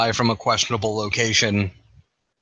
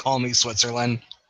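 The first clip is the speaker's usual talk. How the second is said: ordinary delivery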